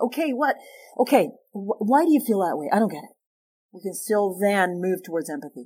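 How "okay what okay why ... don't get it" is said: fed-up, exasperated, irritable, frustrated voice, pitched up. Speaker shows how to ask someone to explain their view, in an irritable, frustrated voice. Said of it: "We can say it in irritable, frustrated voice".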